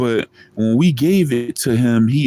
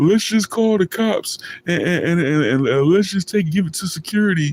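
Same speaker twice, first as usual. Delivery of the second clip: high, tearful, pleading voice, words pushed through crying; 7 semitones higher than usual. Retelling a crying friend begging to hand it over: imitating someone crying. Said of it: "he kept crying and crying and crying".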